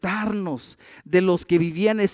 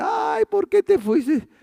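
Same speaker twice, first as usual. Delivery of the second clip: very high-pitched sobbing, wailing cry; 13 semitones higher than usual. Describing mourners at a funeral, imitating mourners crying. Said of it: "y algunos llorando".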